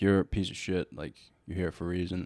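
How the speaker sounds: put-on matter-of-fact, brutally frank, blunt, no-nonsense delivery. Retelling what a therapist told the speaker: imitating a blunt therapist. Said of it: "She was super straightforward".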